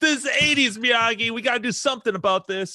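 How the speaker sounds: put-on, pitched way up, irate angry outburst. Retelling a movie character's line from Karate Kid Three: imitating someone pissed off. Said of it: "he's all pissed off in Karate Kid Three".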